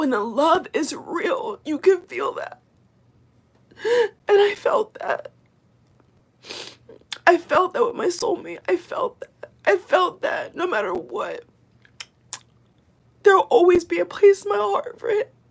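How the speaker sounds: high, loud, weepy voice crying through tears. Talking about love felt with a soulmate, crying while talking. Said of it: "I'm not even crying because I'm sad".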